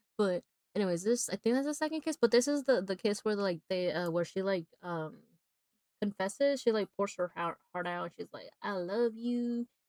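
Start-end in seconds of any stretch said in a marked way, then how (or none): 8.7-9.7 sudden put-on Southern accent. Retelling a woman's love confession from a scene, in a southern accent. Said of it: "I don't know why I took a southern accent".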